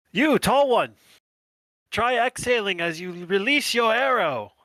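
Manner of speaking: booming, high-pitched, loud shout. A character runs in front of a tree and calls to Cillian: shouting. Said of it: "he's going to shout to Cillian".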